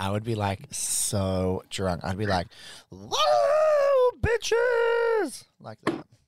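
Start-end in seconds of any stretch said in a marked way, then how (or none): 2.9-5.4 very high, loud, belted, long stretched whoa. Imagining being drunk at speed dating: Miss Piggy-like voice. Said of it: "you sounded a bit like Miss Piggy".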